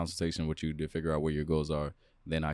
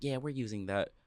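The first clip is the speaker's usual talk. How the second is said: put-on snotty, dismissive, bitchy tone, pitched up; 7 semitones higher than usual. Retelling what a woman at the gym said: imitating a bitchy voice. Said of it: "in, like, a bitchy voice".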